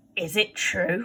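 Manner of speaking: hissed, threatening, menacing tone. Narrator reading Bill questioning Charlie Bates up close: hissed. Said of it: "he hissed".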